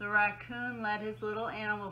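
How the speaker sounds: ordinary delivery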